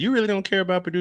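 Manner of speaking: playful teasing tone. Retelling what he asked her about Purdue: retelling a joking question. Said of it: "I'm jokingly said".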